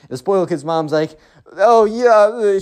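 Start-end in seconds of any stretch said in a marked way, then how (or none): 1.5-2.6 put-on tearful voice, higher and louder. Retelling what a mother said at a house fire: imitating someone in tears. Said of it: "She's, like, in tears".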